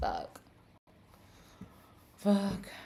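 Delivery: exasperated, frustrated, fed-up swearing, out of patience. A streamer swears while trying to get the camera back on, frustrated. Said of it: "I'm getting so frustrated".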